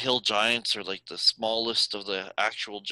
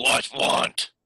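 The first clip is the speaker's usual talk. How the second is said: rough, harsh, gruff giant voice; 2 semitones higher, 4 dB louder than usual. Voicing a creature gripping a rock, asking the party: harsher voice. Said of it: "in a harsher voice".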